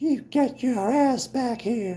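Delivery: put-on high, whistly old man voice. Asked to do the old guy from Family Guy, doing a Herbert from Family Guy voice. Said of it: "it's a little too whistly".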